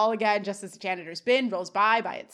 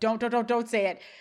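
ordinary delivery

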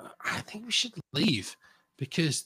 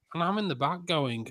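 ordinary talk

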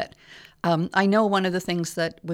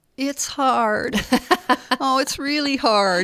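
mock-whiny put-on voice, pitched higher; 7 semitones higher, 4 dB louder than usual. Mimicking the money excuses people give, in a mock-whiny voice. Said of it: "It's a bit of a whiny voice".

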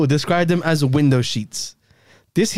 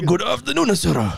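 clumsy, bad, fake put-on Japanese accent; 3 semitones higher than usual. Asked to change the accent, switching to a bad japanese accent. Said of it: "That's super bad".

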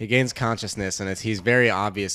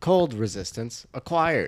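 droning, robotic voice; 4 semitones higher than usual. Quoting the background voice that announces things, in a robotic voice. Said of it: "there's this robotic voice in the background".

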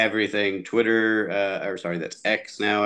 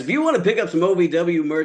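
put-on, pitched-up event announcer delivery; 9 semitones higher than usual. Plugging ovw merch to the guys, announcer voice. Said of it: "Let me put on the announcer voice".

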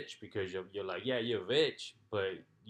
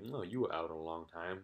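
low, soft, mocking, snide sneer; 4 semitones lower, 6 dB quieter than usual. Retelling how her fiance confronts her at breakfast, in a mock-snide voice. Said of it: "snidely being like".

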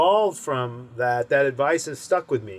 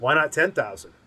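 normal talking voice

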